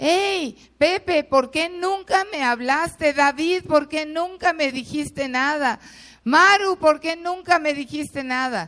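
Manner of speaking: put-on high, desperate yelling. Retelling people in a line shouting at others: retelling people shouting. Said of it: "había gente que le gritaba a otros".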